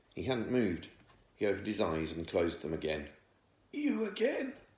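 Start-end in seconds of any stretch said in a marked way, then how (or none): 3.7-4.5 squeaky, cracking voice pitched very high. Reading a story, the unmoving figure behind the tea chests answers: cracked, squeaky voice. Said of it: "he said in his cracked, squeaky voice".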